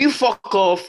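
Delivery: very loud, high-pitched, shrill shouting. Talking in a group about minding your own business: shouting. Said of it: "Why are you shouting now?".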